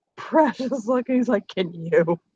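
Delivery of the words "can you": acted line, suppressing a laugh, quieter. Voicing a character teasing another with a smirk, not keeping a straight face. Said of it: "he can't say it with a straight face".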